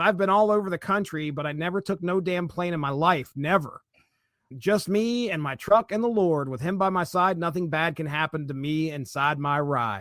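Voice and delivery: ordinary talk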